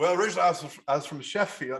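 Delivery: inconsistent put-on English accent. Retelling claiming to be from sheffield: retelling a slipping fake english accent. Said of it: "I kept losing my, my thing, like, my accent".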